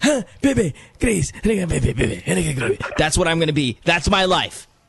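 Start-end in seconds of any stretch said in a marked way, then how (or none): 0.0-2.8 put-on elderly man's voice, calling out. Showing how an aging bachelor will sound calling for Grace: imitating an old bachelor. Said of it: "when I get old, I'm gonna sound like this".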